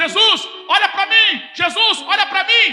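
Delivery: high, very loud, repeated crying out. Retelling how a woman shouted after Jesus: imitating a woman shouting. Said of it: "Gritava, gritava, gritava".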